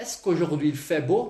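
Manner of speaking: rising, questioning intonation on beau. Demonstrating French intonation by turning a statement into a question: questioning intonation. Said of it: "Vou fazer uma pergunta".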